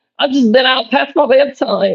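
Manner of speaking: put-on very high, tiny little baby voice. Quoting a grandmother from a video she scrolled to, in a little baby voice. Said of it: "she's in this little baby voice".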